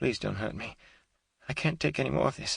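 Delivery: high, hoarse, pleading whisper. Reading a captive woman begging not to be hurt: hoarse pleading whisper. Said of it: "pleaded in a hoarse whisper".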